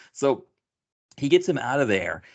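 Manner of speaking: ordinary talk, nothing marked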